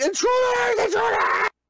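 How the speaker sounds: very high, loud, shrieking alarmed scream. Narrating a fleeing figure who runs through the curtain into the other room: screaming. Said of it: "He's screaming".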